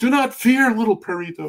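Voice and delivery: put-on booming, very high voice with slight Mexican accent. Demonstrating how he voiced a character, booming Dudley Do-Right voice. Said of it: "a very booming".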